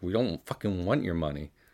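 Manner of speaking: ordinary delivery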